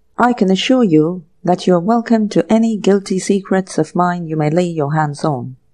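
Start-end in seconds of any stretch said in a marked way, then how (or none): none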